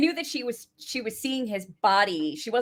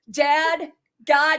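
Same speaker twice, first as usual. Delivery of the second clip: imitated scream, higher and louder; 8 semitones higher, 8 dB louder than usual. Acting out a character's coming-out speech from a show: imitating a character screaming. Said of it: "He's, like, screaming at this point".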